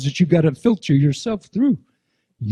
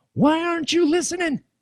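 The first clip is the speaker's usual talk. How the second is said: put-on very high, indignant, angry complaint; 13 semitones higher, 5 dB quieter than usual. Imitating people shaking their fists at God: imitating someone shaking fists at God. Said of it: "shaking your fists at God going".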